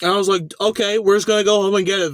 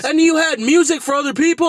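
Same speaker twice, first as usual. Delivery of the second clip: high, loud, yelled voice; 7 semitones higher than usual. Retelling how someone questioned them angrily: imitating someone yelling. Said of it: "he's fucking yelling at me".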